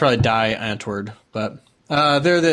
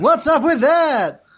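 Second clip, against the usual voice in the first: botched put-on voice, pitched very high; 13 semitones higher than usual. Joking about a cable company topic: bad Jerry Seinfeld impression. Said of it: "I can't do a Seinfeld".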